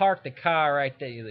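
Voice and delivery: put-on, laid-on Boston accent, said loud. Showing how people from Boston talk: Boston accent. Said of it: "Boston. ... That's how they talk".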